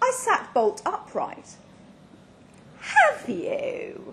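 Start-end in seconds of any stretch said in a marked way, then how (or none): 2.8-4.1 very high, heavily sarcastic jab. The narrator answers a companion's claim of past experience, dripping sarcasm. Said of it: "dripping sarcasm".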